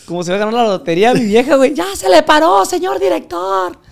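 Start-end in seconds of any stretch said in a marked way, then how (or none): 1.7-3.7 very high, squeaky, drawn-out shrill voice. Retelling his partner's excited call to the director: imitating a shrill voice. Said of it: "como tiene la voz chillona".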